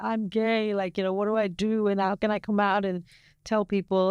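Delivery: put-on bawling distress. Recalling your past self bawling while first admitting it; imitating their own bawling sob. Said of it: "bawling my eyes out, going like".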